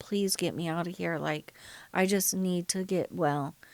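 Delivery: put-on tearful pleading tone. Retelling begging her oldest son's dad, lying in bed with her: retelling a tearful plea. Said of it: "I'm crying".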